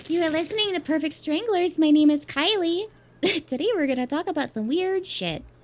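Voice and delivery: high, loud, squeaky helium-balloon voice. Reading the podcast intro after being urged to inhale helium, helium-high voice. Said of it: "Should I go inhale some helium right now?".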